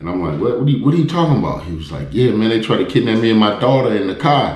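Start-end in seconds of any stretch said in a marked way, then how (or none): 2.1-4.6 high-pitched, put-on Chicago accent throughout. Speaker quotes a man telling his story, in a chicago accent. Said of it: "with the Chicago voice".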